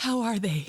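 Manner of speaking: shaky, quivering, trembling voice. Retelling a character's worried question about the others: imitating a shaking voice. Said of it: "voice is shaking".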